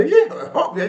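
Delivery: weird, high, hysterical laughing through the words. Retelling the guy's answer when asked if he's a fascist, imitating hysterical weird laughing. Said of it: "he's laughing, this hysterical, weird laugh".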